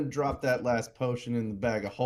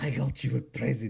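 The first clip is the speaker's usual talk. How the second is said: whispered, in a put-on character voice. Giving a companion a present of books in character: whispering in character. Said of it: "just whisper".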